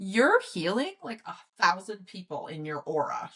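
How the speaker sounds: mildly judging tone, far from neutral. Retelling an aura reader's remark during a reading, imitating a judgmental tone. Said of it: "in a little bit of a judgmental tone".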